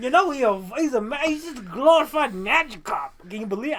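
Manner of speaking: put-on New York accent. Voicing a character, attempting a new york accent. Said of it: "I don't know what accent this is".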